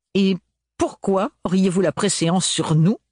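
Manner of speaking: high, contemptuous retort. The man's wife speaks to Ophélie's party, spat with contempt. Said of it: "cracha celle-ci avec mépris".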